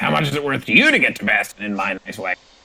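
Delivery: put-on aged, old dwarf character voice. Voicing an old dwarven man haggling over a fare: old dwarven man voice. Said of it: "he scratches his beard and he says".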